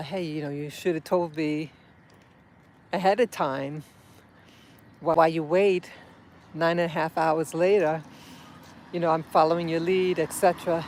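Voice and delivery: ordinary talk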